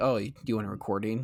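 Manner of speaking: put-on sarcastic tone. Quoting the anime's main character during television memories: mock sarcastic. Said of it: "be really sarcastic".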